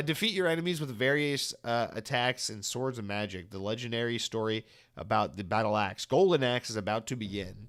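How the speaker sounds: ordinary delivery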